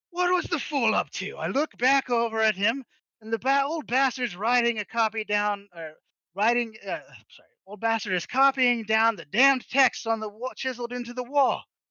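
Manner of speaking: rowdy, noisy, boisterous voice. Narrating as a character in a dragon adventure, boisterous voice. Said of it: "you just hear this boisterous voice".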